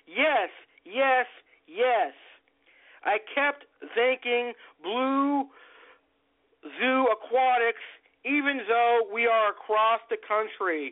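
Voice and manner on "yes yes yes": mock thrilled, delighted, excited repeated bursts. Retelling accepting a replacement Fox Face, re-enacting excited yeses. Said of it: "You could hear the excitement in my voice".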